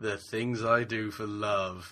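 smug, cocky, self-satisfied, arrogant delivery. Recreating how the line is delivered in the series: mock-smug, arrogant delivery. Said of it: "it's all kind of smug, arrogant, kind of".

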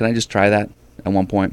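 ordinary talk, nothing marked

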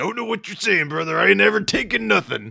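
voice pushed high, loud and rough. Retelling their reply to a man's confusing remark about a game, in a Macho Man impression. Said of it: "I'm doing my Macho Man".

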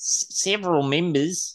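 high, put-on New Zealand accent. In a group trying accents, the speaker attempts one: put-on Kiwi accent. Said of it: "That's Kiwi".

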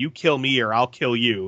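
plain

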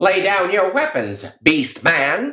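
very high, swooping cartoon villain voice. Speaker recalls another performer's other voice, doing it as a Hanna-Barbera villain voice. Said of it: "It's sort of this Hanna-Barbera villain".

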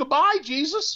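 put-on weepy, tearful little kid voice, very high. Retelling a child's goodbye: imitating a crying child. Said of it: "the child looks up at me with tears in his eyes and goes".

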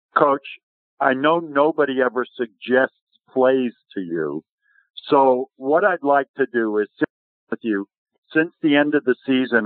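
ordinary delivery

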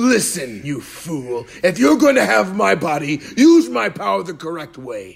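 loud, high anime-style voice. Describing a game, the speaker voices Vegeta scolding the player, Vegeta voice. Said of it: "That's a good Vegeta voice".

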